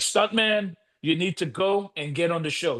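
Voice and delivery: imitated aggressive, demanding tone. Retelling a manager's demand at the hospital, imitating someone turning aggressive. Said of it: "his voice started changing".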